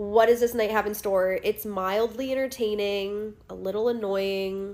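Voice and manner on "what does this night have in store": ordinary talk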